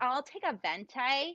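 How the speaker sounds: put-on American accent. An Irish speaker shows how Americans order coffee: mock American accent. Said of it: "ordering with coffee in American".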